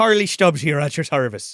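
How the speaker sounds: put-on Irish accent. Joking about an actor's Irish accent role: Harley Stubbs Irish accent. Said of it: "he's doing the Irish accent and everything".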